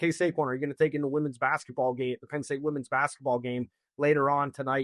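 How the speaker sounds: ordinary delivery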